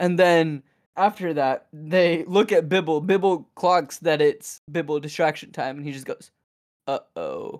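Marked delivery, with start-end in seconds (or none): 6.9-7.6 very low, deep, sexy, sultry voice. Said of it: "still in his deep, sexy voice".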